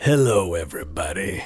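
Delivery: hoarse, nearly lost voice. Sick co-host, asked to say hello, greets the listeners: raspy sick voice. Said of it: "That's really almost all the voice I have".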